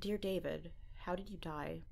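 ordinary talk

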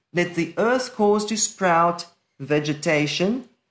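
ordinary talk

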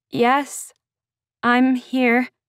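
shaky, wavering voice. Answering a man who asks whether it is her, shaky. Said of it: "My words came out shakier than I would have liked".

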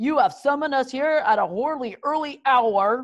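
mocking, contemptuous, scornful sneer. Summoned at an early hour, a man sneers at the one who called him. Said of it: "he sneered".

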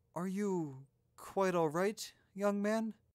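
voice full of concern, pitched a bit high. Asking a young man who has started to panic, voice full of concern. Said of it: "her voice full of concern".

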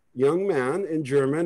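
plain

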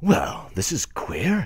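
stunned, petrified muttering under the breath, high. Narrator reads the hero's line as he stands petrified for a moment, muttered. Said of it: "muttered our hero".

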